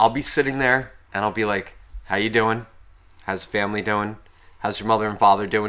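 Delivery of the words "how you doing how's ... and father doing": low, polite, perfectly gentlemanly voice. Retelling how a phone call starts: imitating own perfectly gentlemanlike manner. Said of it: "Perfectly gentlemanlike".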